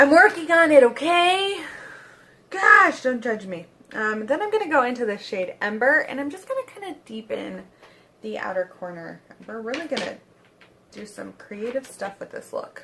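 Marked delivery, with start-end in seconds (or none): 9.5-12.8 tongue-in-cheek, ironic, plainly sarcastic hype. Describing the next eyeshadow step in a makeup look: sarcastic. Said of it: "That was sarcasm".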